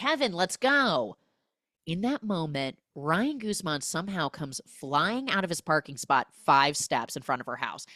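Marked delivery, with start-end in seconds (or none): 0.0-1.2 mock loud high-pitched yell. Retelling a movie scene where she calls kevin: imitating her yelling. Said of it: "And she yells".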